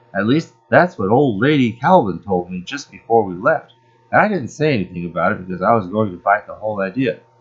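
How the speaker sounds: ordinary talk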